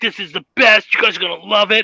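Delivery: put-on excited voice. Retelling what a friend said on bringing them somewhere, imitating Braden's excitement. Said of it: "he's so excited".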